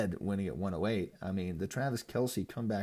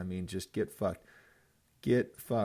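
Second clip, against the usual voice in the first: bitter, resentful tone. Reviewing league results after losing all three games: bitter. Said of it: "you sense the bitterness in my voice".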